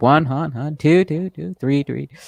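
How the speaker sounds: high, echoing voice, each word repeated. Showing listeners the thing Tight was doing and got known around, in Tight's echo voice. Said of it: "Tight was doing the the echo voice".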